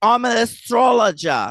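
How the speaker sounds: put-on Australian accent with a lisp. Recapping a show's premiere, the speaker is imitating Kendra, Australian accent. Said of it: "why'd you give her an Australian accent?".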